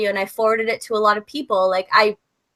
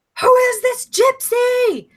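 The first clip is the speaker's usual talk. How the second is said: put-on very high, drawn-out shrieking scream; 14 semitones higher than usual. Retelling how a boyfriend started screaming at a party: imitating boyfriend screaming.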